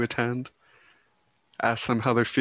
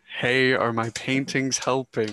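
plain

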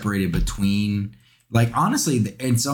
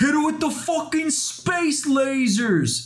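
thick, over-the-top put-on New York accent, high. Retelling what a guy said about MTG in New York, imitating the most New York accent. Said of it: "in the most New York accent ever".

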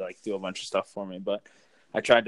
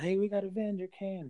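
put-on child's yell, higher; 11 semitones higher, 4 dB quieter than usual. Retelling how a little kid yelled out: imitating a kid yelling out. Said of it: "yelled out".

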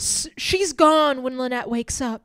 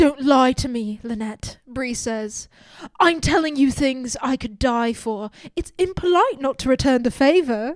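imitated British accent. Reading a character's line aloud in a british accent. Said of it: "The British accent is killing me".

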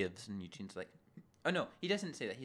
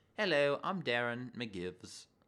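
fake English accent, pitched lower; 3 semitones lower than usual. Speaker discussing an episode, quoting a character: Darren's fake English accent. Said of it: "it sounds like a fake English accent".

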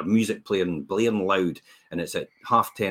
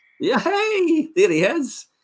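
put-on, derisive, sing-song jeering through laughter; 11 semitones higher than usual. Recalling people who laughed as he walked past, imitating their mocking laughter. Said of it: "just laughing at me and saying".

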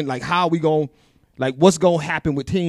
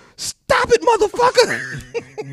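put-on shrill, very high, angry little-kid yell. Quoting a three-year-old niece yelling at the speaker's brother-in-law in the car, retelling a mad yell. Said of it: "she got mad and just yelled out".

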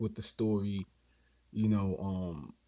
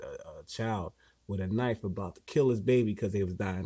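ordinary delivery

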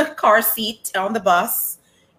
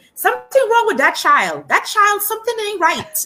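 put-on very high-pitched, loud Caribbean accent; 13 semitones higher, 5 dB louder than usual. Retelling her mom nudging her, in her mom's caribbean accent. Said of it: "in her Caribbean accent".

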